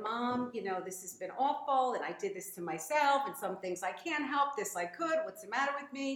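ordinary talk

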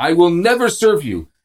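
put-on, full-throated screamed outburst. Retelling how a woman behind a bakery counter screamed: imitating someone screaming. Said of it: "started screaming at me".

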